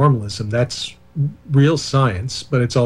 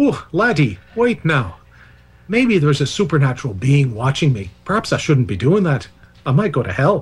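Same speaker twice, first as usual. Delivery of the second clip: worst possible put-on Irish accent. Voicing someone wondering if a supernatural being watches, bad put-on Irish accent. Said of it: "that's my worst possible Irish accent".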